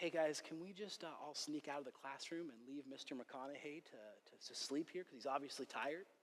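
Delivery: half-whispering, very quiet, hushed, barely audible. Retelling what the teacher told the class while he slept: half-whispering. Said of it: "he whispers to them".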